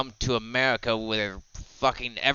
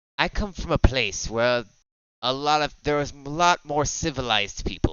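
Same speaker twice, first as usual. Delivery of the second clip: funny put-on English accent, London style. In an actual-play game, a London character answers another character, funny London accent. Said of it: "Uh, London. / Uh, London. / but you got a funny accent".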